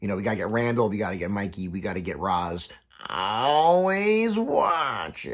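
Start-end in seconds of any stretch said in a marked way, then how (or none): 3.1-5.3 bad, very high, swooping voice, stretched out and squeaky. Listing Monsters Incorporated characters they want, then doing a terrible Roz impression. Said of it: "Terrible impression".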